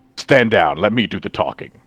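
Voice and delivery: stern, commanding officer's voice. Describing what he would say in this situation: commander's voice. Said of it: "But he says it in the commander's voice".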